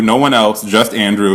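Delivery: ordinary talk, nothing marked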